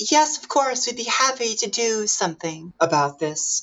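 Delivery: very high, bright, sunny, eager voice. Voicing the maids who show up all cheery: cheery maids' voice. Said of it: "The Boggin maids show up all cheery and say".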